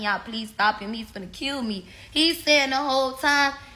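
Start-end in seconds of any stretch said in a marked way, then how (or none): 0.0-1.9 desperate, begging voice, pleading hard. Retelling being beaten, imitating her own begging for help: retelling her own begging. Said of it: "I'm just begging".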